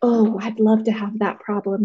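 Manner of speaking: usual speaking voice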